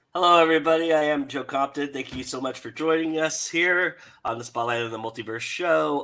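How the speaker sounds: scratchy, raspy, hoarse voice, pitched slightly up. Show host opens the episode while getting over being sick: raspy voice. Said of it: "just have to deal with the raspiness".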